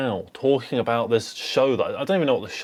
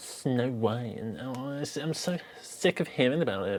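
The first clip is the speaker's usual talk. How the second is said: put-on drawn-out teenage girl voice; 8 dB quieter than usual. The speaker's best impression of a teenage girl: teenage girl impression. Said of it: "that was my best impression of a teenage girl".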